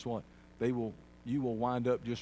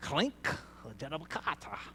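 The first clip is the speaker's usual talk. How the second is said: put-on speaking in a German accent; 4 semitones higher than usual. Describing the voice of rejection, the speaker has it talk in a German accent. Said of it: "He can talk with a German accent".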